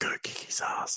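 breathy, hushed whisper. Retelling a movie scene where Niobe tells Morpheus to go: whispering as Niobe. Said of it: "like, whispers it".

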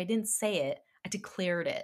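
plain

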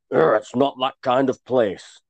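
menacing, snarling voice. Narrator voices a doorman grabbing a man by the collar: snarling. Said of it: "he snarled".

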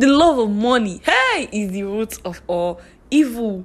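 preachy pulpit-style cadence. Quoting scripture about money, the speaker sounds like a pastor. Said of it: "I sound like a pastor right now".

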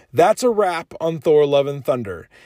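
ordinary talk

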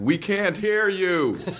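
high, called-out heckling yell. Comedian retelling being heckled from the back of a theater: imitating a heckler. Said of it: "I was getting heckled from the back".

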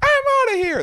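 put-on little girl voice, very high-pitched and loud. Acting out a girl at communion, in a little girl impression. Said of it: "That's my little girl impression".

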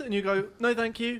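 squeaky, very high, cracking voice. A speaker recounting a brief exchange, voice cracking. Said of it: "That was just my voice cracking".

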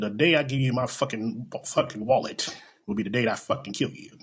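deadpan, straight-faced flat delivery. Retelling what a lady said when asked for her license: imitating a deadpan threat. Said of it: "And she said it with a straight face".

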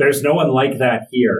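called out aloud. Narrator voicing the innkeeper's answer to the party, yelling loudly. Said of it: "you can hear her yelling loudly".

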